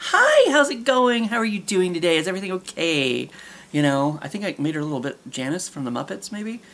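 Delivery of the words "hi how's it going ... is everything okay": put-on high, sing-song customer-service voice, slow and swooping. Imitating a woman switching on her customer-service voice as she walks out. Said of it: "the customer service voice".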